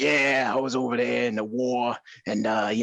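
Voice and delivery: put-on classic old-timey New York tough-guy accent. Describing a voice actor's character: imitating an old-timey new york tough voice. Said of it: "an old-timey New York tough impression".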